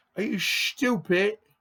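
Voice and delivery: very high put-on English accent, stupid as shtoopit. Showing how English people pronounce a word, mock English accent. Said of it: "That's how an English person says stupid".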